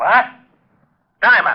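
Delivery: high, angry shouting outburst. Told the caller Jerome wants Diamond again, the speaker yells for Diamond. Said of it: "You better watch that yelling".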